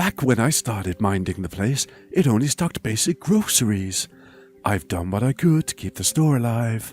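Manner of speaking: poor soft put-on voice. Voicing the store character Leaf, unsure how Leaf sounds: bad Leaf voice. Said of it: "Awful voice".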